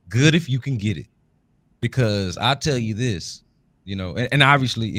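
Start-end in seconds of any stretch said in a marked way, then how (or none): 0.1-1.0 sarcastic, said with irony, tongue-in-cheek. Answering with six words about a question, tongue in cheek: sarcastic tone. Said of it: "It is sarcastic".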